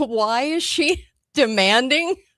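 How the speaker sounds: slow, laughing disbelief through the words.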